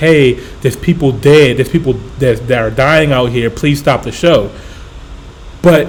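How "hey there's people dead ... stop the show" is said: ordinary talk, nothing marked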